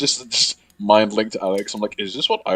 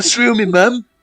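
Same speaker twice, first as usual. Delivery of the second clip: imitated British accent, higher and louder; 12 semitones higher, 6 dB louder than usual. Imagining what a tough character would say before stabbing someone: put-on British accent. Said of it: "Stutters and British".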